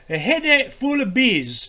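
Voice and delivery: bad, unconvincing Scottish accent, slow and high. Speaker retrying a phrase after being teased, in a bad scottish accent. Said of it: "That sounds more like another accent".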